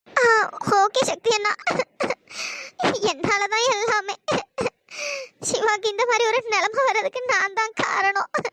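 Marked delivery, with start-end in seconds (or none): 0.9-4.2 speaking through tears, crying. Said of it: "please அழுகாதம்மா".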